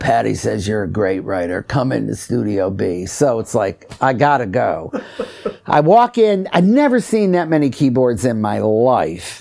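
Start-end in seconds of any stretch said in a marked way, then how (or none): 0.0-3.1 deep, low, soft man's voice. Retelling what a stranger outside the stall said; imitating a deep voice. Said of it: "kind of deep voice".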